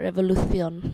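Spanish pronunciation with a lisp. Repeating revolution the way the Spanish would say it, Spanish accent with lisp. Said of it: "that's how the Spanish would say it".

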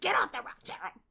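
very high, shrill, very loud barked delivery. Retelling a movie scene where seals order a bird away: imitating seals barking an order. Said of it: "and then they bark at him".

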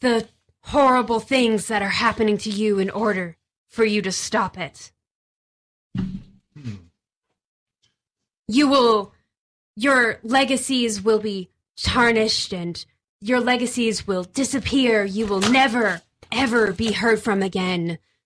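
hissing, sibilant speech. A voice speaks telepathically into the listeners' minds: hissing telepathic voice. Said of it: "In this like hissing voice that you all understand, / In this like hissing voice that you all understand, / you hear this voice enter your brains. So it's speaking telepathically".

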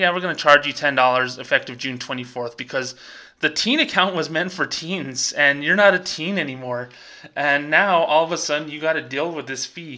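normal talking voice

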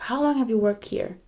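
mock condescending, arrogant, sarcastic voice. Retelling a manager's question at work: imitating an arrogant, sarcastic manager. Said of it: "arrogantly and sarcasm".

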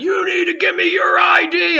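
put-on aggressive yelling, pitched way up, loud. Retelling an FBI agent pointing and demanding ID: imitating someone yelling. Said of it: "pointing at me and yelling at me".

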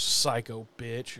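low, grumbled under-the-breath mutter. Retelling what a man said walking into the alley: imitating someone muttering. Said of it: "he literally mutters".

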